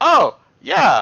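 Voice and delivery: high, loud, eager tone. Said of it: "he's like".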